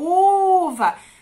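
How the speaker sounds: very loud, high, long-held drawn-out u in uva. Teaching a child vowel sounds, drawn-out u in uva. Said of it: "você prolonga sempre o som".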